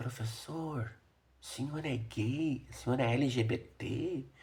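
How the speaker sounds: quiet, hushed low voice. Retelling how a student asked the teacher a question: imitating a student's low voice. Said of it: "ela falou num tom de voz baixo".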